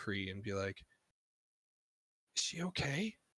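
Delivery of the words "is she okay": pitched-up stage whisper, as an aside. Voicing a character who asks a player if someone is okay: whispering. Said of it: "whisper to you".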